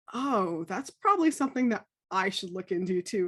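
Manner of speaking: ordinary delivery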